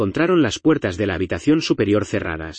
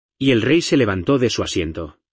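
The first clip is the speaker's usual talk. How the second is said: plain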